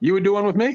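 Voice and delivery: genuinely surprised. Answering another speaker's offer to join in: surprised. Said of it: "Why do you sound surprised?".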